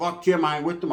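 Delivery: ordinary delivery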